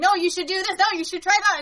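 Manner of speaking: put-on high, clamoring yelling and screaming voices. Retelling a film scene where the family points behind her: imitating family yelling. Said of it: "all yelling and screaming".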